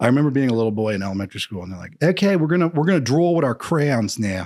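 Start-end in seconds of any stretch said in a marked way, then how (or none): 2.0-4.5 put-on higher-pitched Philly accent. Remembering elementary school, quoting what the class was told: Philly accent. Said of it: "It's a weird accent in Philly".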